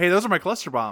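acted eager, thrilled outburst. Retelling a cartoon scene, acting out a character's line: imitating Starscream excitedly. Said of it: "Starscream excitedly turns to Thundercracker next to him and goes".

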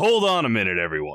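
authoritative, commanding, loud call. Speaking as a player character stopping a rushing crowd: commanding voice. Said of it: "with a commanding enough voice".

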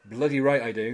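ordinary talk

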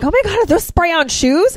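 mock gushing excitement. Retelling a film scene where she meets Flint: imitating someone geeking out. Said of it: "she kinda starts geeking out".

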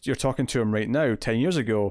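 normal talking voice

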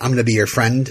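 ordinary delivery

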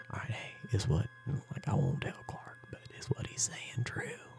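close, intimate whisper. Leaning in to a friend holding a gun: whispering in his ear. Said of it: "I'm gonna whisper in your ear".

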